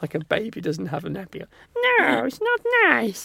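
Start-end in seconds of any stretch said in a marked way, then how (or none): 1.8-3.3 very high, swooping, fussy grandmother voice. Retelling grandma fussing about naked babies in the pool: imitating grandma's voice. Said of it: "Just make a big fuss".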